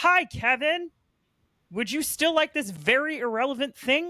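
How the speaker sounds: put-on high frog-puppet voice. A speaker acts out an example greeting to a listener: Kermit the Frog impression. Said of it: "such a good Kermit the Frog uh, impression".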